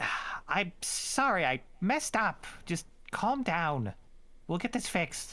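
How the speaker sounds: squeaky, high, tiny little voice. Tabletop player voicing Cranberry, speaking to Guinness: Cranberry's squeaky little voice. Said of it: "in a squeaky little voice".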